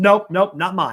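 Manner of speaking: put-on curt brush-off. Retelling how a man brushed them off without turning around, imitating a curt brush-off. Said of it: "just kind of shoos me away".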